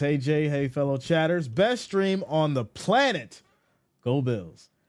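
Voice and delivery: normal talking voice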